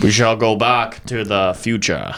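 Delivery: put-on British accent. Doing Gandalf reading for the role of Doc Emmett Brown; Gandalf voice. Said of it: "Why am I British now?".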